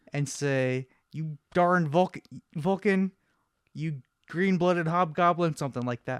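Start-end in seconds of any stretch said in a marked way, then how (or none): 1.1-5.5 put-on angry old-man character voice. Showing the other speaker how to impersonate McCoy: mock-angry McCoy impression. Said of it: "Just gotta be an angry old man".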